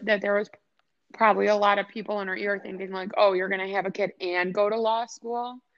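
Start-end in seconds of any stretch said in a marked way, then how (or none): none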